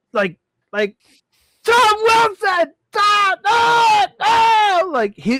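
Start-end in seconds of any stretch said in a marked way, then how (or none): 1.6-4.9 very high scream, stretched out very slowly. Retelling a hyped game call: imitating Gus Johnson screaming. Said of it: "his voice was like".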